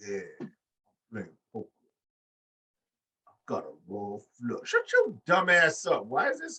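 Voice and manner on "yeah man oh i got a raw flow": low, slow drawl, every word dragged out, wrestler style. Mocking a wrestler's promo: slow-talking Duke Hudson impression. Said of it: "He just sounds like".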